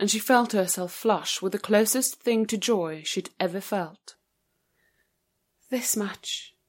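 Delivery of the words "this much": softly spoken, much quieter. Imogen replying to her child's words, said quietly. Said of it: "she said quietly".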